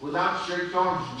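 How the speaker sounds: plain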